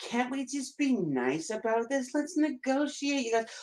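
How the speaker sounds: very high woman's voice, pleading and placating. Mocking how women answer a conflict: imitating women. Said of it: "But women never see it that way. They always like".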